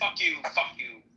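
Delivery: mock angry, cursing-style delivery. Imitating how an always angry person says hello: imitating an angry greeting. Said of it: "He's gonna say hello is".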